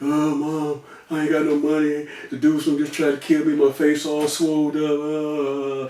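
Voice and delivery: mock tearful sobbing voice, last word drawn out. Retelling a collect call to Mom after being attacked: imitating own past crying. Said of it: "I'm crying".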